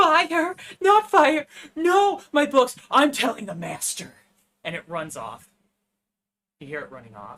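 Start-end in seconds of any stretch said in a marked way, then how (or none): 0.0-4.1 panicked shrieking, very high and very loud. Voicing a creature at a window as fire spreads: screaming in panic.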